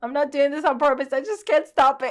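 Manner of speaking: very loud, tearful, sobbing through the words. A character who has just been told not to start crying answers, crying. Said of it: "Don't start crying now".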